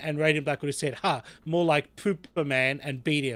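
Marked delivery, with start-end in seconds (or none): none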